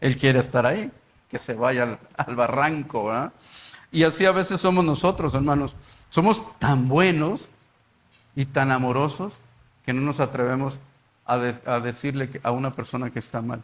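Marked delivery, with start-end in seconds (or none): 6.6-9.4 slow, ironic, mocking sarcastic tone. Speaking to brothers about how we act, said sarcastically. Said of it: "lo estoy diciendo bueno y amorosos con sarcasmo".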